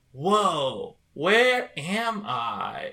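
very slow, plain, generic, drawn-out voiceover. Mocking a Mario movie line: imitating Chris Pratt as Mario. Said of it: "Chris Pratt who goes in and goes like".

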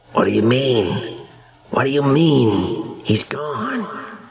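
rough, guttural, croaky female voice, mean and stretched. Heard through a door down the stairs, a female voice speaks, guttural and croaky. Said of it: "Their voices are guttural and croaky".

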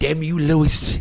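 put-on cartoon baby voice. Quoting a cartoon character after a fact about fertilization: Stewie voice. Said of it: "as Stewie from Family Guy would say".

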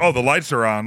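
normal talking voice

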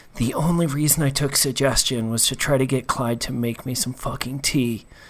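confiding, hushed stage half-whisper. Pressing a face against a magic barrier in character: half-whispering. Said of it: "I'm gonna whisper".

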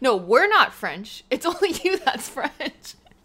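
high, loud speech through laughter. Retelling a movie joke to another speaker, laughing while talking. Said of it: "you just laughed while you were retelling it".

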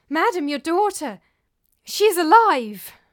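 high, very loud, delighted joyful cry. A nurse tells her mistress news of her daughter, crying out in delight. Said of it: "cried the nurse".

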